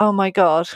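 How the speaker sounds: put-on voice choking up with emotion. Retelling a caller's reaction to good news: imitating someone choking up. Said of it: "I can hear him still to this day choking up".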